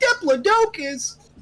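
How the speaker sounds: squeaky, very high, goofy, funny voice. Saying a word you can't pronounce with a funny voice on Diplodocus. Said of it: "just say it with a funny voice, like".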